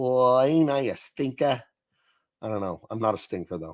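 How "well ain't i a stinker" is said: slow, drawled, heavy Brooklyn accent. Showing off their impression after discussing the character's accent: Bugs Bunny voice. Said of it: "What sort of accent was that that Bugs Bunny had?".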